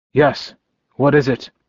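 plain

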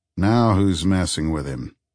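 plain

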